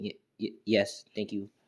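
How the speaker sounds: stuttering, stumbling, halting stammer at start. Voicing a shy character thanking her rescuer: stuttering. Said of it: "she would have her stuttering saying".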